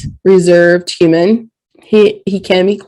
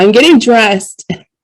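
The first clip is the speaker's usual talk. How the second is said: put-on cranky, grumpy old man delivery; 3 semitones higher than usual. Retelling the kid's words after he slammed the closet door: imitating a grumpy kid. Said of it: "grumpy old man".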